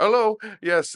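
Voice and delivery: put-on high-pitched Indian accent. Retelling how someone answered a phone call, in a put-on Indian accent. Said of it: "Parsi or Indian accent".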